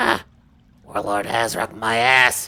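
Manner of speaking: hushed, whispered goblin voice. Voicing a goblin behind the desk talking to another goblin: goblin whispering. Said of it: "whispering to each other".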